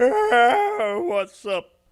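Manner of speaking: high, drawn-out yawn on "Ah" through words. Opening a Sunday morning show episode, talking through a yawn. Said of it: "I was yawning".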